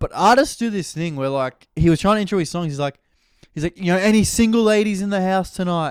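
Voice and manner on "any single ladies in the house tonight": horrible put-on American accent, pitched up. Imitating an artist introducing his songs, horrible American accent. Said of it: "I'm doing a horrible American accent".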